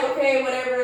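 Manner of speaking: ordinary delivery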